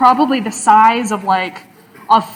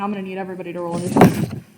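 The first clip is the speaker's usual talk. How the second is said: ordinary talk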